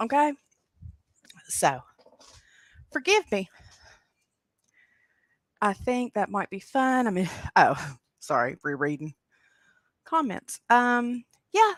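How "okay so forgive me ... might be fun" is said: winded, out of breath, breathing hard. Apologizing after running up and down stairs, out of breath. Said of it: "I'm winded because I just ran up and down a flight of stairs".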